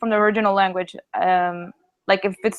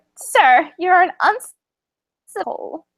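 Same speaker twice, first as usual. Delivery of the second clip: put-on high-pitched elderly woman's voice; 9 semitones higher, 3 dB louder than usual. Reading a character's line in a group, using an old lady voice. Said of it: "I have the best old lady voice".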